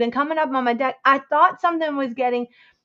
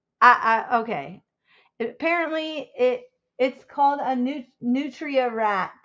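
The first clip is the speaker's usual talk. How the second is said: ordinary talk, nothing marked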